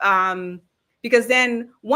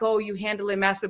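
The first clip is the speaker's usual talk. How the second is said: put-on condescending tone, quieter; 5 dB quieter than usual. Quoting a council member's remark to a rival candidate, in a mock-condescending tone. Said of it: "in this condescending tone".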